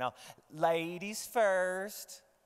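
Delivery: put-on folksy Southern US accent. Letting a woman go first, in a put-on southern accent. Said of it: "I put on my southern accent".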